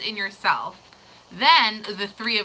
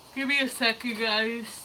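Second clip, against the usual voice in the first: yawning while talking, quieter; 7 dB quieter than usual. Recommending a deck to someone, the speaker asks for a moment while yawning. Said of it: "Super yawning".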